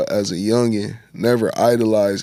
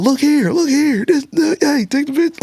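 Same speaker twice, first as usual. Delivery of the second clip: very high, screamed calls. Retelling photographers calling out on the walk to a show: imitating people screaming. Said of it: "people screaming".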